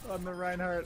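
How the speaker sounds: dismayed shout, high-pitched and loud.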